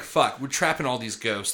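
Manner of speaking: plain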